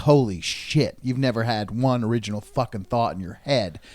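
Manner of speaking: ordinary delivery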